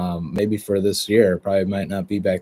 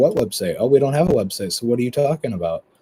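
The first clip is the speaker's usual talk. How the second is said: dry, mocking sarcasm, swooping sing-song; 4 semitones higher than usual. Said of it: "after being sarcastic".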